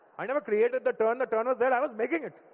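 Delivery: put-on mimicked thick Indian accent. Retelling what dad said in an argument, imitating dad's thick Indian accent. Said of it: "how thick my dad's Indian accent was".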